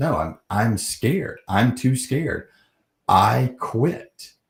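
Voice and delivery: high, slow, tearful bawling, sobbing through the words. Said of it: "I'm bawling, crying".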